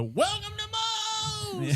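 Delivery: very high scream at the top of the lungs. Retelling walking into a busy restaurant, imitating staff screaming a greeting. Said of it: "they screamed at the top of their lungs".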